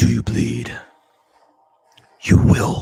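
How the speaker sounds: loud, rough, gravelly growl. Performing a line you love from a shot you are watching, in a poor Batman impersonation. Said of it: "my poor impersonation of Batman".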